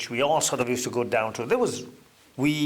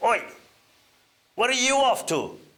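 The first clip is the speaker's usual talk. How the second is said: very high, gruff, barked shout, acted; 10 semitones higher than usual. Retelling how the PE teacher shouted after a departing pupil: imitating Bill Samuel's gruff shout. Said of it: "in a very gruff voice".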